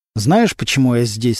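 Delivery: ordinary delivery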